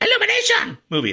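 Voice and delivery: sing-song cartoon sidekick voice with big pitch swoops. Recommending a kids' movie now in theaters, the speaker names its studio in Minion voice. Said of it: "That was me doing the Minion voice".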